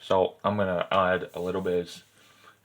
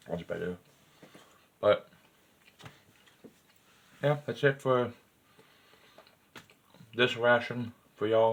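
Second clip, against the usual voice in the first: speaking with food in mouth, chewing; 4 semitones higher than usual. Wrapping up a ration tasting for viewers, talking while chewing. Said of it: "I'm still chewing".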